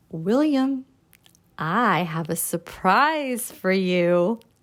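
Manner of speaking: slow, drawn-out, suspenseful, holding back. Demonstrating how they would get his attention: suspenseful voice. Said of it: "Using your voice and your face and your body in a suspenseful way".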